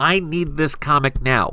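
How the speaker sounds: ordinary delivery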